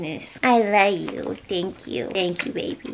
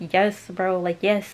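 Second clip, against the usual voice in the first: ordinary talk, nothing marked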